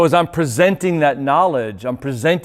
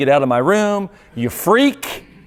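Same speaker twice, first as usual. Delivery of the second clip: put-on contemptuous, hostile yelling outburst; 3 semitones higher than usual. Retelling yelling at a brother to get out of the room: imitating own past yell. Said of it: "I yelled at him".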